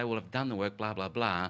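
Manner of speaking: normal talking voice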